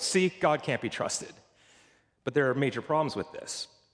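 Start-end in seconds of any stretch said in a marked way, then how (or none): 0.0-1.3 mock know-it-all tone, very smug and self-satisfied. Mimicking skeptics who set up an argument against God: mock-smug. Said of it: "they say it very smugly and go".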